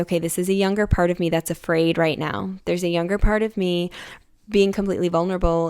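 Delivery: ordinary talk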